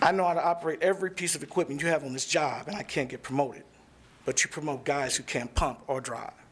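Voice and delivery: ordinary talk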